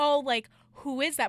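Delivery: loud, open delivery. Retelling a guy asking who someone is: imitating someone being loud. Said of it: "being loud about it".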